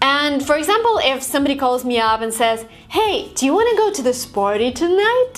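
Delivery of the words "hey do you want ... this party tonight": steep upward tune rising high through tonight. Showing the intonation when somebody calls with a question: pitch rising all the way up. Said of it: "So it goes all the way up".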